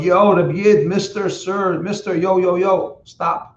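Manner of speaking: very slow, high, stretched-out yelling scream. Retelling a story where a man calls after a passing peddler; imitating someone screaming. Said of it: "And he screams out".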